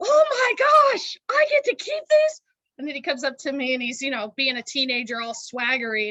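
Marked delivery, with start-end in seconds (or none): 0.0-2.4 very high, shrill, very loud yell. Retelling what a young man yelled on walking in: imitating a teen yelling. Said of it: "he was yelling".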